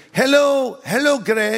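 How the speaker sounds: imitated elderly lady accent. Telling a story, quoting an elderly lady greeting him, imitating an old lady's accent. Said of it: "I'm trying to do their accent".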